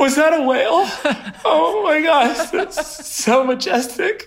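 very high, near-tearful, half-crying voice full of wonder. Retelling watching a whale peek out of the water, imitating half crying. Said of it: "I'm like half crying".

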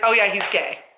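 put-on offhand, nonchalant child voice. Retelling what one of the girls said about Colin: imitating Savannah, nonchalant. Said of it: "so nonchalant".

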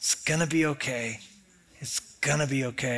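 whispering. Retelling what is heard on prayer walks: whispering. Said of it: "Sometimes he just whispers".

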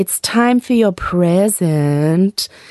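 put-on seductive voice, slow, words drawn out. Retelling a bedroom surprise for a partner: retelling a put-on sexy voice. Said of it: "trying out the sexiest voice I could muster".

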